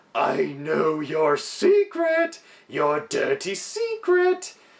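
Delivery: high, slow, taunting scream.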